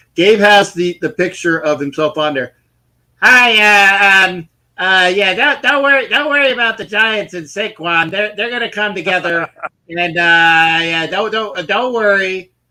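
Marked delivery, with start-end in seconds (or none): 3.2-12.4 hesitant, halting, reassuring, um-filled ramble, drawn-out "hi". Doing an impression of Gabe reassuring about the Giants and Saquon: Gabe impression. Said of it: "This is my impression of Gabe".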